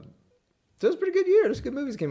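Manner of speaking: very high, swooping, sing-song lilt. Chatting with another person about Spider-Man movies, high-pitched voice. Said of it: "I said that in such a high voice".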